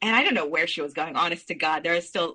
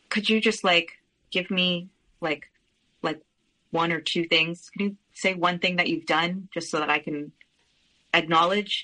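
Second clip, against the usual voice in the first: ordinary talk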